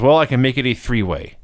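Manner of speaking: normal talking voice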